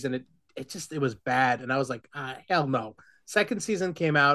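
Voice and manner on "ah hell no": ordinary talk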